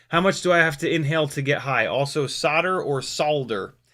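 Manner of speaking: plain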